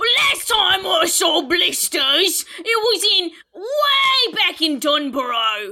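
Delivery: put-on London Cockney accent. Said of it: "He did a Cockney accent".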